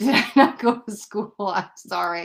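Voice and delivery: talking while laughing at oneself. Trying to pronounce a chat viewer's name, laughing while talking. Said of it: "I'm laughing at me".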